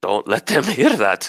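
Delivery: amused, spoken through a little chuckle. Voicing a camp man warning a traveler not to be overheard: little chuckle while speaking. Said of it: "he gives a little chuckle".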